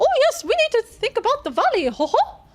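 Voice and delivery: high, loud voice with swooping pitch. Showing how a line was meant to sound: Mickey Mouse voice. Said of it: "doing the Mickey Mouse impression ... I was trying to make it sound a bit like that".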